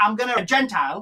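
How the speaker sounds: ordinary talk, nothing marked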